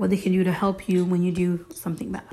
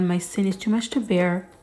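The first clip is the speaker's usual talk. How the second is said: ordinary talk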